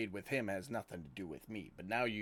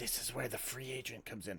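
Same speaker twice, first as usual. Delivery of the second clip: hushed, quiet whisper; 2 semitones higher than usual. Voicing a character who turns to Tukra to explain: whispering quietly. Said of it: "and whisper quietly".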